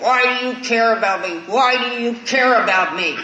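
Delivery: loud, repeated put-on screaming. Retelling calling someone up months on end: retelling own screaming. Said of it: "screaming at him".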